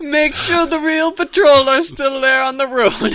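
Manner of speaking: exaggerated fake Italian accent. Reading a clumsy text aloud after a suggestion: put-on stereotypical Italian accent. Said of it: "Italian, huh?".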